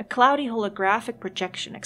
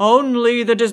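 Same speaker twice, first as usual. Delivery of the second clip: booming disembodied voice, louder; 8 dB louder than usual. Reading the game's disembodied voice line aloud: booming voice. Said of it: "I need a better booming voice".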